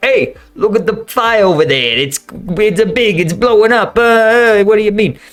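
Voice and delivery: clumsy, exaggerated Jersey accent. Describing Jersey Shore locals watching a distant fire: bad New Jersey accent. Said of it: "a bad Jersey impersonation".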